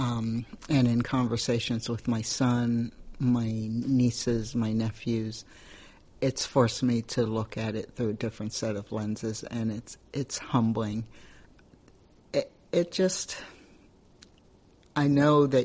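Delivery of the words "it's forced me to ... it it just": choking up, fighting back tears while speaking. Answering another speaker who said don't cry: holding back tears. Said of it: "so I'm trying not to".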